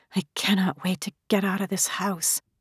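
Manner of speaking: soft mutter under the breath. A daughter arguing with her mother adds a remark, under her breath. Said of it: "Under her breath".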